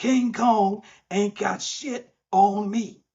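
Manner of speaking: very high, drawn-out scream. Quoting a favorite movie line where the character screams: Denzel Washington impression. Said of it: "the best Denzel Washington you're gonna get out of me".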